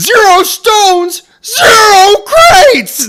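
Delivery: put-on shrill, very high, very slow, drawn-out furious scream. Recounting a movie scene, retelling his screaming. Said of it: "he's screaming this shit".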